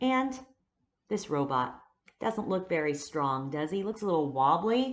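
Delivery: ordinary talk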